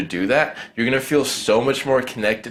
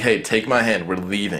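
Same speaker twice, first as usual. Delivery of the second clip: firm, commanding, take-the-lead delivery. Leading a girl through a nightclub: commanding tone. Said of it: "you need to be able to talk to a girl in a commanding tone".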